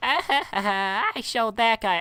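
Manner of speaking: put-on very high childish kid voice. Picturing a kid coming out of the hall, doing an impression of the kid. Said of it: "I'm gonna do my best impersonation of when this kid comes out".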